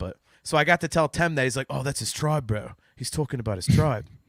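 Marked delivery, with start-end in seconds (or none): 1.7-2.7 poor attempt at New Zealand accent. Retelling a celebrity's reply at a meeting, bad Tem New Zealand accent. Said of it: "I'm bad at the New Zealand accent".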